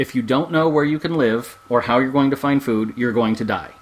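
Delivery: deadpan, flat, plain-spoken, matter-of-fact delivery. Explaining to the other speaker the risks of withdrawing from civilization, matter-of-fact. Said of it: "it was just funny how you said it so matter-of-factly".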